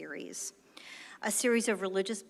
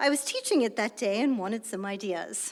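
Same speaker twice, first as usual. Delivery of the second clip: loud, bad, hammy put-on British accent; 3 semitones higher, 6 dB louder than usual. Retelling what a colleague named John replied: bad British accent. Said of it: "forgive my bad British accent".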